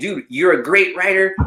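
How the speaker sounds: furious, angry yelling. Retelling an argument where they yelled a compliment at him, retelling an angry yell. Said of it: "I'm yelling at him like we're fighting".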